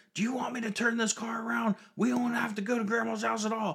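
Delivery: put-on shrieking, very loud, shrill angry yell. Retelling the time they turned around in the car and yelled: retelling own angry yell. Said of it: "I turned around and yelled".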